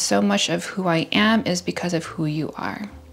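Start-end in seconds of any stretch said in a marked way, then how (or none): none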